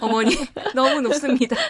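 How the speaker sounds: playful, high, loud, laughing delivery.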